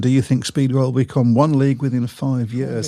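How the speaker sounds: normal talking voice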